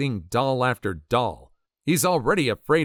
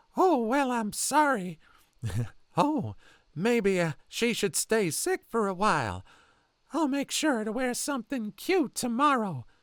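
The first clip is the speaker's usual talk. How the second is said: very high, eerie, creepy falsetto reading; 10 semitones higher, 4 dB quieter than usual. Storyteller voicing the creepy man from the story, in a Herbert from Family Guy voice. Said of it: "I almost read it in that voice".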